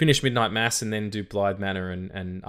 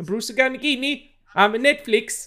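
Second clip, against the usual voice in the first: bad Swedish accent, much higher and louder; 6 dB louder than usual. Teased for not having many voices, attempting a bad swedish accent. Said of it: "That wasn't a Swedish accent".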